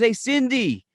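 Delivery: put-on Boston accent. Retelling a new store worker calling a coworker over, thick boston accent. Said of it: "he's got this real thick Boston accent".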